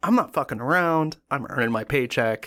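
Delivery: plain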